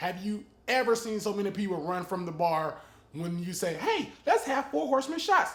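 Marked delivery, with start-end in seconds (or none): 3.7-5.5 put-on high-pitched office secretary voice. Telling listeners what not to order at a bar, in a secretary voice. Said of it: "in your secretary voice".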